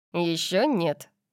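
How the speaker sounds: muttered. He answers her question as she sits near him on the cliff, muttered. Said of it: "пробормотал он".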